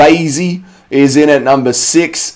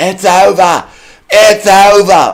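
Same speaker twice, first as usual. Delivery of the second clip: put-on high, very slow, stretched-out wail; 5 semitones higher than usual. Imagining a referee stopping a fight: imitating Goddard screaming. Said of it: "we'll get to hear Mister Goddard scream".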